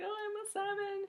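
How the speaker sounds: put-on very high, drawn-out, slow tearful blubbering wail. Retelling how a girl answered the speaker's mom, imitating a girl crying. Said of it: "crying even more".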